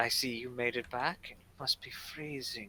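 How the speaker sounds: very quiet, soft, close whispering voice. In a role-play, a character speaks into the listener's ear in a soft whisper. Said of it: "you hear a soft whispering voice in your ear".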